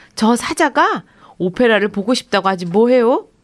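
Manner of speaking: mocking tone. Reading a story, the ticket clerk responds after the manager's answer; teasing. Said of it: "놀리듯 말했어요".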